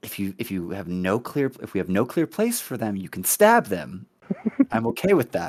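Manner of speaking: loud stage whisper. Player whispers to a companion, meant to be overheard, in a loud stage whisper. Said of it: "I'm gonna whisper a little too loudly".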